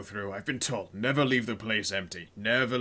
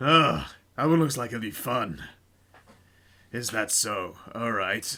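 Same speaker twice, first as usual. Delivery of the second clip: vicious, menacing, leering tone full of relish; 3 dB louder than usual. Voicing an orc who looks a captive up and down: vicious leering orc. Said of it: "a vicious leer in his eyes".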